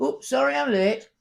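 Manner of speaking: put-on broad Manchester accent, high-pitched and loud. Retelling a woman arriving late while the Reverend reads, very northern Manchester accent. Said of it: "A very northern Manchester accent".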